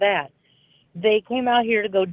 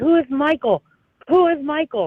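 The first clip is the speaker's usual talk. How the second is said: put-on, pitched-up police officer yelling; 6 semitones higher than usual. Retelling a police officer yelling questions at her, retelling a cop's yell. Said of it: "is yelling at me".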